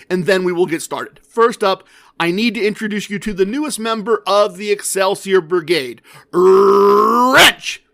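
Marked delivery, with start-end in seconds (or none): none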